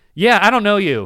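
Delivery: high, loud, dismissive retort.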